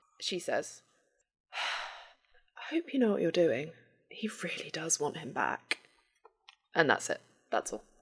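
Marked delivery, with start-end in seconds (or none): 1.5-5.8 mild, soft-spoken, quiet voice. The narrator voices Kenna speaking straight into a player's head, in Kenna's soft-spoken voice. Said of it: "you hear the soft-spoken voice from Kenna".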